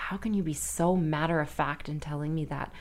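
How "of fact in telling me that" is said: normal talking voice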